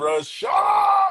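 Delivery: very high, slow scream. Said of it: "his publicist was in that room screaming".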